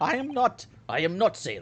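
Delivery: badly done, laid-on, fake Russian accent. Voicing a sailor character who objects to being called a sailor, bad Russian accent. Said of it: "I can't do Russian accent".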